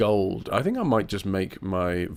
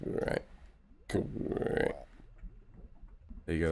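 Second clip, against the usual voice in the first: soft, breathy, hushed frog voice; 3 semitones lower, 12 dB quieter than usual. Speaker shows off a frog impression; frog impression. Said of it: "That's my best frog impression".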